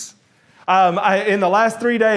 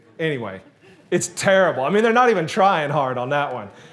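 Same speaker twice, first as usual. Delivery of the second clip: ordinary delivery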